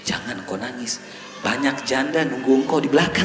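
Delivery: quiet, hushed voice.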